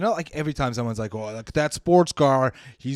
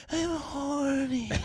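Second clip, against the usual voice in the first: goofy, weird, very high, soft, squeaky, drawn-out voice; 12 semitones higher, 7 dB quieter than usual. Describing a guy he knew, the speaker imitates the guy's weird voice. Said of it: "this is his voice".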